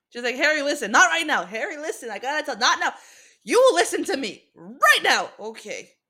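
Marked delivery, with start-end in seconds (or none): 0.4-5.3 high, loud, insistent screaming. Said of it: "conditioned to listen when women scream".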